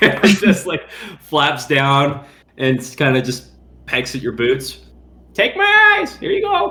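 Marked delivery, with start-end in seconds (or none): 5.3-6.7 very high, parroty bird-talk voice. A player voices a raven offering its sight, in a parrot voice. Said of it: "only know how to do a parrot voice for birds".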